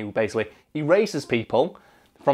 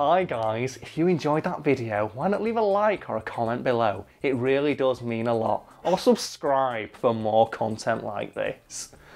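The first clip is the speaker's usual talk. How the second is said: dry, sarcastic tone. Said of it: "You could sound less sarcastic".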